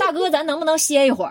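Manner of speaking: fierce Northeastern dialect scolding. Retelling telling a chatting stranger to be quiet, in angry Northeastern dialect. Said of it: "非常愤怒的掏出我的东北话跟对方说".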